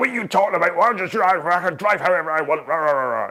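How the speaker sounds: put-on belligerent, aggressive, very Scottish accent, high-pitched. Retelling a road-rage argument with a squat driver: imitating an aggressive Scottish man. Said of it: "in a very Scottish, like".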